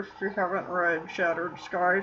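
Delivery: low, soft, muffled voice.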